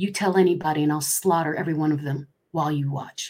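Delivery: sweet, soft half-whisper. Retelling a threat half-whispered into the ear: imitating a sweet half-whisper. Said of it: "he whispered in my ear so sweetly".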